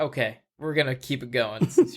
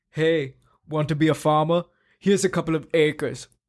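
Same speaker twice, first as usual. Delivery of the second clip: put-on German accent; 3 semitones higher than usual. Asked to say it one more time, doing a German-sounding accent. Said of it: "now you're doing like a German".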